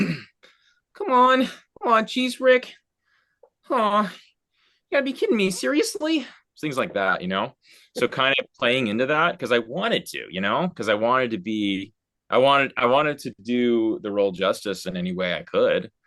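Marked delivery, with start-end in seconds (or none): 0.0-6.3 very high-pitched character voice. Recalling a line performed in the role: Morty voice. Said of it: "I gotta do the voice".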